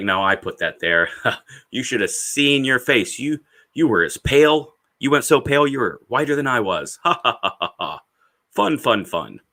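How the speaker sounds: mocking, teasing tone through bursts of laughter. Retelling an imagined teammate revealing a prank: imitating someone laughing while talking.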